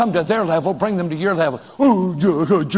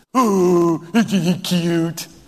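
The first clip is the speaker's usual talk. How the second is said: put-on baby-talk voice. Imitating how a woman talks, imitating baby talk. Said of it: "Why are you talking like that?".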